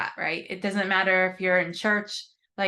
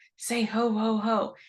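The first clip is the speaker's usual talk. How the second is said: put-on whisper. Retelling a sister's whispered prompt during a toy-microphone recording: imitating a whisper. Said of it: "I could hear her whisper".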